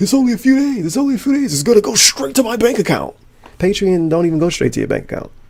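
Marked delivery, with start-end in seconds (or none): 0.0-3.2 very high, rushed, panicky gabble, rattled off. Mocking how the other speaker asks for money: imitating frantic fast talk. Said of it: "He fucking panic and act all frantic".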